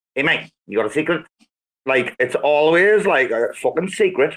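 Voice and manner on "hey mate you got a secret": put-on South African accent. Mimicking how South Africans ask for a cigarette, South African accent. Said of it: "The ultimate accent has to be the South".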